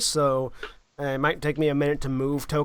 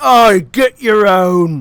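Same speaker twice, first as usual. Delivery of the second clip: very loud, booming, guttural giant bellow; 4 semitones higher, 13 dB louder than usual. Narrating giants overheard talking, masculine giant voice. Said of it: "a distinctly masculine giant voice going".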